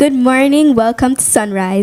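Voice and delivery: on-air radio presenter voice. Asked to show a radio voice on air, demonstrating a radio host voice. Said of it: "Can I hear somebody's radio voice".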